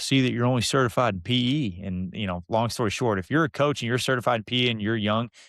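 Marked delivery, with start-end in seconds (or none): 0.0-1.8 put-on folksy country boy voice. Retelling a phone call from a man who called him Coach: imitating a country boy. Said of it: "he's just a good old country boy from Vernon".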